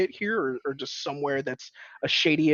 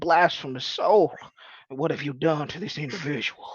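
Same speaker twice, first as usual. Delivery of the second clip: imitated small-town Texas accent. Retelling a run-in with a preacher, imitating his small-town Texas accent. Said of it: "the accent who was like straight out of small town Texas".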